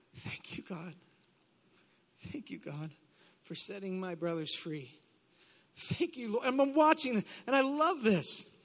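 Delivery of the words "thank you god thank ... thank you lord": mock tearful, very hushed, quiet weeping voice. Recalling standing there as men came up to the altar, retelling weeping thanks. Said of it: "and I'm weeping".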